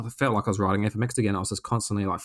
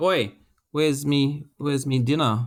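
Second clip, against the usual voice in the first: put-on Australian accent, pitched up; 5 semitones higher than usual. Imagining the other speaker going back into the kitchen, in an Aussie accent. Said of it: "starting to sound a bit more Aussie".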